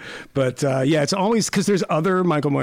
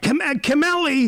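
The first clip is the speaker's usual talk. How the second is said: put-on yelling voice, higher pitch; 12 semitones higher than usual. Recalling how someone calls out a name: imitating Jason Stanley yelling a name. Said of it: "it's like the guy at the bagel shop yelling".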